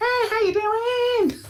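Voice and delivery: very high, silly, joking head-voice falsetto. Imagining singers talking regular speech in falsetto, joking falsetto. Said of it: "like talk regular and falsetto?".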